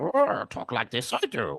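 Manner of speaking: very slow, drawn-out, swooping, sing-song puppet voice. Recalling the puppeteer behind the little swamp puppet: imitating the swamp puppet's voice. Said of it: "the little puppet in the swamp and went".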